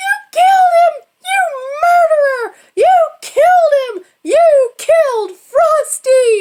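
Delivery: put-on child's high squeal. Retelling how a little girl screamed at the adults: imitating a child's high-pitched squeal. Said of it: "let out that high-pitched squeal".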